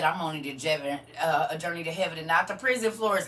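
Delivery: ordinary delivery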